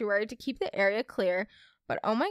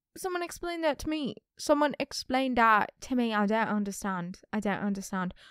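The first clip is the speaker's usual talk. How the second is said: unplaceable, clumsy, fake British accent. Speaker retelling her confused reaction at a camp talent show, in a bad British accent. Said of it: "I don't know what accent this is".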